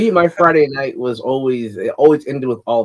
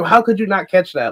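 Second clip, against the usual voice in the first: put-on high, mad, frustrated yell like a kid; 6 semitones higher than usual. Retelling being a child watching a kids' show: imitating own past yelling. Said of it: "six years old yelling at the T V".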